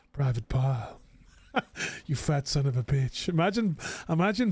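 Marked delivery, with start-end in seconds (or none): 0.2-3.3 gentle, easygoing, soothing tone. Imagining a drill sergeant's insult in a soft voice: Bob Ross soft voice. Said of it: "I'm seeing Bob Ross in his soft voice".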